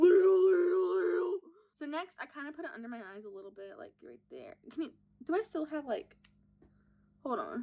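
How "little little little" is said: belted out high and cartoonish. Showing off the one impression the speaker can do, Patrick Star impression. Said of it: "but I can do a Patrick Star impression".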